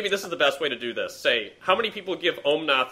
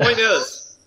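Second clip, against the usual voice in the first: plain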